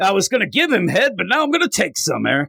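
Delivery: put-on Southern accent. Riffing on a comic-book scene, slipping into a southern lawyer accent. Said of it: "I'm starting to talk like a Southern lawyer".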